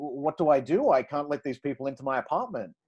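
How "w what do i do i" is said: ordinary delivery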